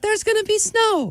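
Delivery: very high, gentle, sweet angelic voice. Quoting how she says snow is coming, in a sweet, angelic voice. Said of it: "she's so nice and she's like, ... That's a sweet voice. That's an angelic voice".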